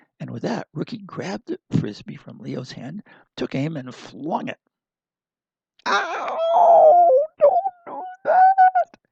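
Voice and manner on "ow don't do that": very high, very loud, very slow squeak. Reading a story, voice a talking bag just hit by a Frisbee, high-pitched, squeaky voice. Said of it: "came a high pitched, squeaky voice".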